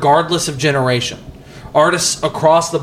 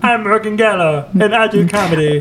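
put-on mocking impression voice; 5 semitones higher than usual. Mimicking Morgan Geller while Morgan listens: mocking Morgan Geller impression. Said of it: "What is this voice that you always project onto me?".

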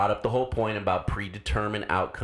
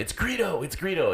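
very high, shrill, repeated yelling; 9 semitones higher than usual. Tell what cracked you up: one man started yelling at another; retelling a yell. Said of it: "started yelling at him".

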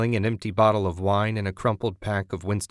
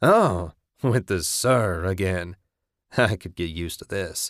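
chuckling through the words. A man answers a couple found among his belongings, chuckling. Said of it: "he chuckled".

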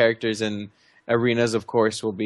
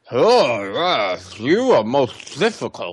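put-on muffled voice, as if mouth stuffed with cotton; 2 semitones higher than usual. Quoting a man whose voice sounds like cotton in his mouth, muffled, cotton-in-mouth voice. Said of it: "As if there's a bunch of cotton in his mouth".

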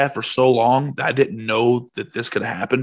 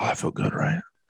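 soft, breathy, hushed whisper; 4 semitones higher, 8 dB quieter than usual. Retelling what a chiropractor said during an adjustment: imitating a whisper. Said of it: "that motherfucker whispers".

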